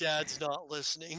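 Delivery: plain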